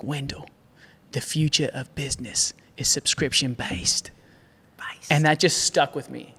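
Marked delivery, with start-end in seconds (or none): 0.0-4.1 put-on breathy New Zealand accent, near whisper. Retelling what a man told him in his living room, in kiwi accent. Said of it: "in his Kiwi accent".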